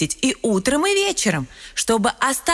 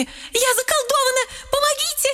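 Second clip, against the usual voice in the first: very high, shrill, panicked frightened cries; 14 semitones higher than usual. The letter Я runs to the house of the doctor, the letter В, frightened shouting. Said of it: "Перепуганная я бросилась... с криками".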